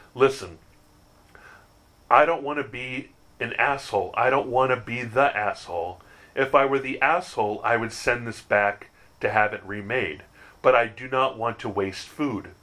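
real, firm, assertive, standing-firm tone. Retelling speaking up about the order with the unwanted salsa: retelling an assertive demand. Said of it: "in a real assertive voice".

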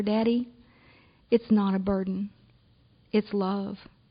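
acted whisper. Retelling words said to a dad in a hospital hallway: retelling a whisper. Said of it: "bend down and whisper".

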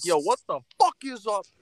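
very high-pitched aggressive yelled shout. Recreating the classic podcast intro: aggressive imitated intro shout. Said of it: "All fucking aggressive".

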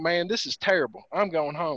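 plain

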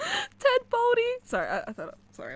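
talking through laughter. Reacting to the nickname ted baldy: laughing while talking. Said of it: "I'm laughing at my own joke".

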